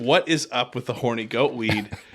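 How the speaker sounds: ordinary talk, nothing marked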